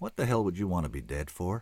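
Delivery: hushed, gentle voice. He adds a last question after finishing: soft. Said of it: "he added softly".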